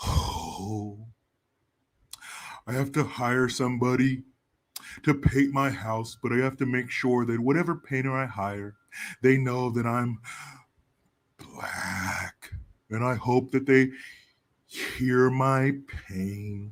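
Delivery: low, dejected, glum cartoon donkey voice. Responding to a message about wokeness, doing an Eeyore voice. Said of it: "Respond to it in the Eeyore voice".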